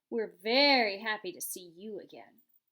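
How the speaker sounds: sarcastic, voice dropping. Narrator reading the sister bear's reply to Roz, voice dropping with sarcasm. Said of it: "Her voice dropped with sarcasm".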